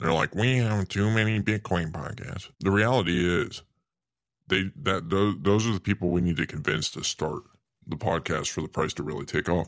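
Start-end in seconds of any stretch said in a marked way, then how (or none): 0.3-2.5 nasal, mocking, dismissive scoffing voice. Mimicking people who turn up their nose at more Bitcoin podcasts, in a nasally voice like Pledder. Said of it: "They got a nasally voice like Pledder".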